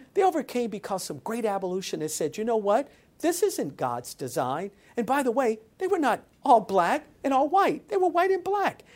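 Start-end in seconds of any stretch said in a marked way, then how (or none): none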